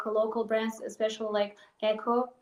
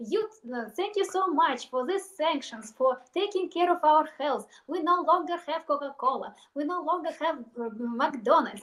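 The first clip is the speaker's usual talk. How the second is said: heavy, laid-on put-on Russian accent; 4 semitones higher than usual. Retelling a blogger's video thanking the West for sanctions: imitating a heavy Russian accent. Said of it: "she used heavy Russian accent".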